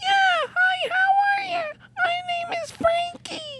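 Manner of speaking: very high, pushed-up puppet voice. A performer introduces his little puppet to the audience, Frankie puppet voice. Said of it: "Does the little puppet talk?".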